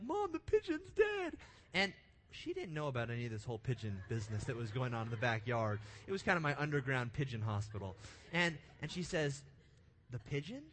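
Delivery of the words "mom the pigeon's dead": very high-pitched, tearful, sobbing wail. Retelling running in to mom back then, acting out own crying. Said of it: "and I'm crying".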